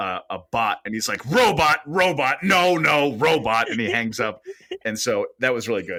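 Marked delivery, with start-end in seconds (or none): 1.3-3.7 mock very slow, cross, drawn-out, high-pitched. Retelling a movie scene where a man hangs up on a robocall, imitating angry Tom Hanks. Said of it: "Angry Tom Hanks".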